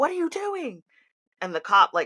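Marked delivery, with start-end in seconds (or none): 0.0-0.8 mock very high, frantic, panicked shriek. Retelling a traffic stop, slamming the trunk down in front of the cop: retelling her own scream. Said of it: "I slam the trunk down and I scream".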